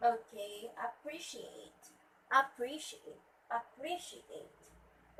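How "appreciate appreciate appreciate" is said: slow appreciate with stress on the second syllable. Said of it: "It should be at the second syllable".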